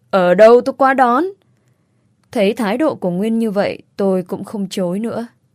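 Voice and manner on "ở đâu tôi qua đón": curt, forceful, harsh, raised voice bearing down hard. Reading a novel, Nguyên presses the narrator over the phone: harsh, forceful tone. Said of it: "Nguyên gằn giọng nói".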